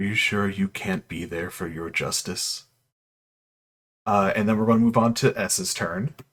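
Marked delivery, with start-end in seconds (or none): 0.0-2.6 barely-there, bell-clear, very faint half-whisper. Narrating a game, voicing a voice that speaks to a player: very faint half-whisper. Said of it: "though it's a very faint whisper".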